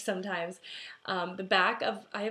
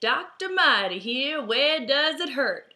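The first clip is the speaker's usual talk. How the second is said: slow, drawled put-on cowboy accent, high and loud; 5 semitones higher, 8 dB louder than usual. Recalling an episode where Marty checks the speaker's hurt ankle, imitating Marty's cowboy accent. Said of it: "she like put on this cowboy accent".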